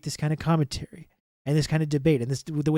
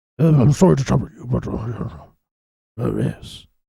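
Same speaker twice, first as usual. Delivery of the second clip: slow, loud, jowly British politician voice; 4 semitones lower, 6 dB louder than usual. Showing someone how to do the impression by moving your jowls, give a jowly impression. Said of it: "you have to move your jowls ... you give it the British inflection and it's Boris Johnson".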